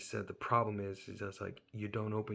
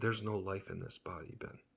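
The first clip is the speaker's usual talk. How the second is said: imitated male voice, lowered; 4 dB quieter than usual. Retelling what a stranger said after leaning in close: imitating a lowered voice. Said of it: "he lowered his voice and he said".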